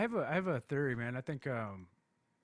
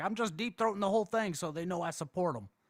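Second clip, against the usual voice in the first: play-acted worked-up anger, voice pitched up; 6 semitones higher, 4 dB louder than usual. Retelling what someone said as he left: imitating someone getting mad. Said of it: "He got all mad".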